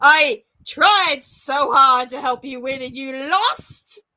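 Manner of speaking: raging, very loud, furious swearing outburst. A game master voices a character scolding the players, swearing. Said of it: "She starts swearing in a language".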